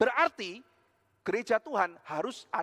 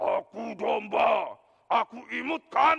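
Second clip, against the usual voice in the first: creaky, growling, slow, rough dragon voice; 3 semitones higher, 4 dB louder than usual. A preacher acts out a dragon shaped like a sheep, in a dragon voice. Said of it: "Suaranya si naga".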